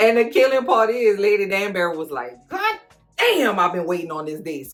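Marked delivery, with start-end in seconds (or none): 2.5-4.7 mock giddy, excited, swooping voice. Retelling a scene from the story, quoting Lady Danbury: imitating excited Lady Danbury. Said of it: "Was so excited".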